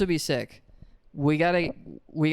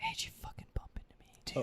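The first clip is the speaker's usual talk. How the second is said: put-on hushed frat boy voice, higher and quieter; 16 dB quieter than usual. Acting out a frat boy asmr video: whispering frat boy. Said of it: "but he's whispering that".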